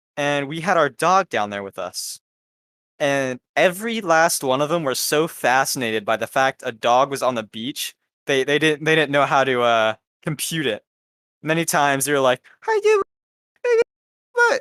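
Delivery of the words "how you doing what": put-on very high, rapid, babyish baby voice. Speaker retells how beachgoers talked to the family dog, imitating baby voice. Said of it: "They were doing that baby voice".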